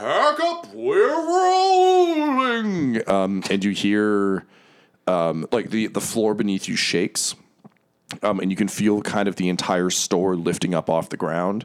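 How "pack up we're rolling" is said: very high, very slow, amplified booming roar. Narrating a character who leans back and roars, magically amplified roar. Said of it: "roars in like a magically amplified voice".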